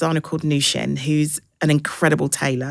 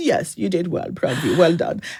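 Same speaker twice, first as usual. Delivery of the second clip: low-key, unfussed, calm, understated delivery. Retelling a phone call from their dad, imitating his calm voice. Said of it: "he's just very calm".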